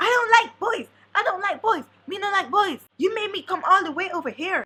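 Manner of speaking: high, furious, angry screaming. Retelling what a man screamed in the lobby, reenacting his angry scream. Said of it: "very angry, screaming in the lobby".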